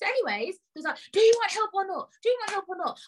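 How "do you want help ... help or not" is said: put-on high, angry shout. Retelling what a man said while shouting at the speaker: imitating someone shouting. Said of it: "because he's shouting".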